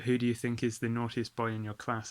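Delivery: ordinary talk, nothing marked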